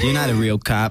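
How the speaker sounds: usual speaking voice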